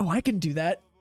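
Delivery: ordinary delivery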